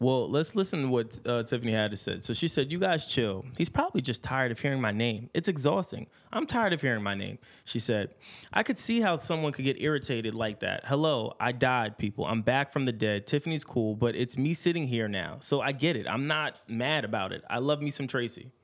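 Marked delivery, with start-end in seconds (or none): none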